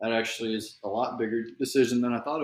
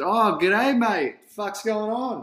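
high, slow, bright, easygoing cheerful voice; 10 semitones higher, 7 dB louder than usual. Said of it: "and goes".

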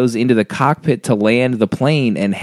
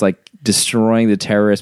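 ordinary delivery

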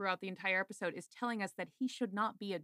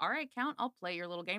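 normal talking voice

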